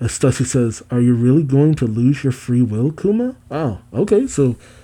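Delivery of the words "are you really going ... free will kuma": normal talking voice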